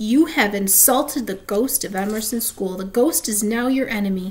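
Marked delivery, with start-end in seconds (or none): none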